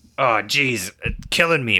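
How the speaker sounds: put-on drunk groaning. Retelling a drunk passenger on a flight: imitating a comically loud drunk. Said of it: "comically loud, like a Muppet".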